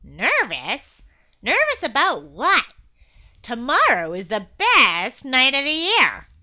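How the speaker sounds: loud, swooping, snickering sarcastic scoff. Glum answers his brother Gloom, who is nervous about tomorrow: sarcastic snicker. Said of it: "Glum said with a sarcastic snicker".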